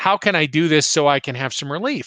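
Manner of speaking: ordinary talk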